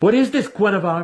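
very high, imperious, commanding tone. A sinister wizard addresses an ally in front of his adversary, demanding. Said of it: "Massage demanded".

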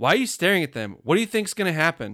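very loud, carrying, high outburst. Retelling what the little brother said to his older brother, retelling a loud remark. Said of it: "he just loudly goes".

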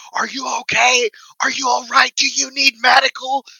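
mock, very high-pitched, screamed concern. Retelling how strangers pulled the speaker off the ground, retelling people screaming. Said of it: "screaming at me".

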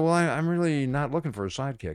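ordinary talk, nothing marked

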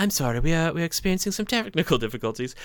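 put-on high British woman's accent. Retelling a performance that broke down when another voice came out: british lady voice. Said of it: "like a British lady voice".

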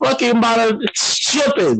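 very high, drawn-out street-slang voice. Showing how speech switches with family: switching into vernacular speech. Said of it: "I'll switch between that real quick".

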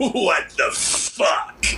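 acted cackle-laced exclamation. Retell what Pillman says when already in the car, with Pillman's cackle. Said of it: "with that cackle".

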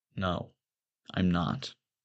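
low whisper under the breath. Narrator answering only to himself after being called the boy next door: whisper. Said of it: "I whisper to myself".

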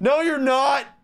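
mock very high, shrill, loud shout. Retelling a luggage delay announcement, the speaker imitates a man yelling. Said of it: "this guy just starts yelling".

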